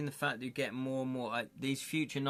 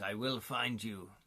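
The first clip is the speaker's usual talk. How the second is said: put-on German accent; 3 semitones lower than usual. Quoting the well-known clip from Taken, do Liam Neeson in German accent. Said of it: "in his German accent".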